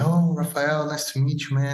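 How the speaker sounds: put-on very gentle, soft-spoken voice. Retelling meeting a humble guy who knew his name, imitating a super gentle voice. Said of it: "he was always talking like this, super, you know, gentle".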